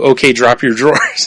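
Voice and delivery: normal talking voice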